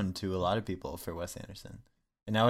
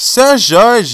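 fake Brazilian accent, much higher and louder; 13 semitones higher, 20 dB louder than usual. Repeating a name to friends who react to the voice; put-on Brazilian accent. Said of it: "You Brazilian?".

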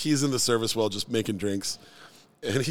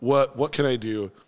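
flustered, panicked stuttering and stammering. Retelling spilling beer on a guest: retelling own flustered stuttering apology. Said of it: "I'm stuttering my way through".

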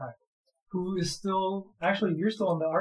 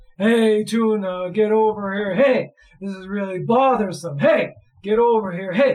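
very loud, booming, beastly walrus creature bellow; 3 semitones higher, 9 dB louder than usual. A storyteller narrating a scene to the party, doing the Tonka walrus voice. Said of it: "the Tonka walrus is going".

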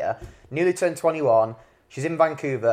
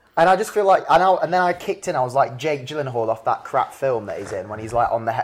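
ordinary talk

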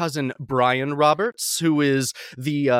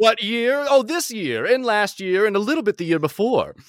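put-on transatlantic Hollywood accent, pitched up; 6 semitones higher than usual. Being asked about working in Hollywood, answering in a transatlantic accent. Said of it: "my transatlantic accent".

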